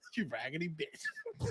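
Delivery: put-on low, hushed, dead-serious delivery. Repeating a line a wrestler said so seriously: imitating a dead-serious insult. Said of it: "He was so serious".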